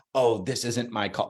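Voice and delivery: ordinary delivery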